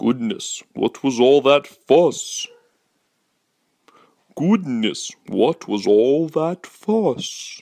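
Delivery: different voice, like a dad. Reader voicing the dad's line while reading a comic strip, dad voice. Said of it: "Started on a different voice for the dad".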